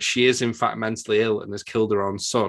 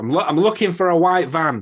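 put-on, sudden, urgent, loud, high-pitched exclaiming; 8 semitones higher, 6 dB louder than usual. Retelling a scene where a man who thinks a woman was kidnapped exclaims. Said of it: "He exclaims as such".

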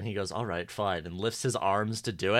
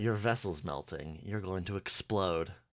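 put-on calm, much quieter, lower pitch; 4 semitones lower, 8 dB quieter than usual. Recapping a TV episode, quoting Death's line: mock-calm Death impression. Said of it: "he says it really calmly".

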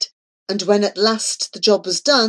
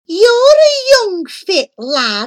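piercing, loud, swooping screech, way up high; 11 semitones higher, 5 dB louder than usual. An ugly creature orders a young lad to fetch apples, shrill screech. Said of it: "she screeched in a shrill voice".

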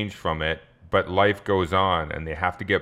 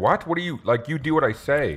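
flustered, furious, pitched-up sputtering outburst; 8 semitones higher than usual. Retelling McNulty's answer after a witness is asked for: imitating McNulty infuriated.

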